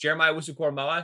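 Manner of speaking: rattled off very quickly in one breath.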